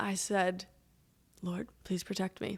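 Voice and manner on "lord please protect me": put-on muttering under the breath, quieter. Retelling a quiet prayer before attempting a stunt: imitating muttering under breath. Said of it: "under my breath".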